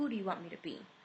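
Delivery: very dark, shadowy tone. Retelling a faceless spirit's words from a dream: imitating a very dark voice. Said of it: "he says to me in a very dark voice".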